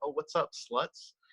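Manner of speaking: hushed, soft mutter under the breath. Retelling own words said to women while waiting to order: imitating muttering under breath. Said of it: "So under my breath".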